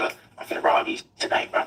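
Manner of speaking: put-on whispering. Retelling what he whispered in the speaker's ear: imitating someone whispering. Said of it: "he whispered in my ear".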